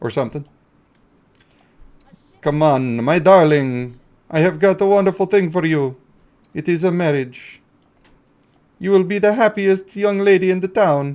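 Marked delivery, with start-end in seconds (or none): 2.4-11.2 slightly vampire-ish voice. Speaker voices a line while playing a game, slightly vampire-like voice. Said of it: "I sounded a little bit like a vampire there".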